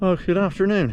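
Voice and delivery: out of breath. Greeting at the start, just after walking two miles up a steep hill: out of breath. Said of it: "If I sound out of breath".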